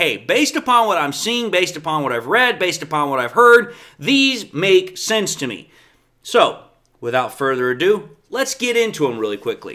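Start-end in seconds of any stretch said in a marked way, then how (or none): none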